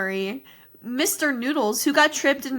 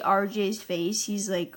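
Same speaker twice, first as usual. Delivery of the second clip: ordinary talk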